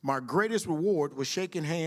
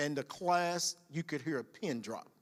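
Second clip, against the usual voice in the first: ordinary talk, nothing marked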